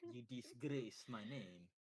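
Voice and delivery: put-on French accent. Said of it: "She probably has a French accent".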